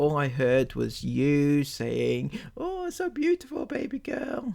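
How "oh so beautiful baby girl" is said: very high, soft, whiny little voice. Criticizing someone's performance, quoting them back to them: mocking their little whiny voice. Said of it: "in your little whiny voice".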